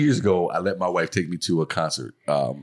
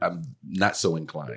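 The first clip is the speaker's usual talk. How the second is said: ordinary talk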